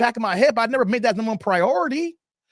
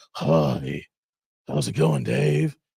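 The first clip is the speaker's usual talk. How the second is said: put-on very slow, croaky, creaky just-woke-up voice; 13 semitones lower than usual. Imitating someone answering a FaceTime call: imitating a sleep voice. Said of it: "you got your sleep voice".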